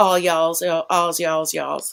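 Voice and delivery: played-up, put-on Southern Louisiana accent. Describing a parole show out of Louisiana, speaker shows off: Louisiana accent. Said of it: "I'm really good at the Louisiana accent".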